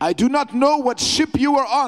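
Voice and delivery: put-on German accent on every word. Speaker retelling what a man said, put-on german accent. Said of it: "with his German accent".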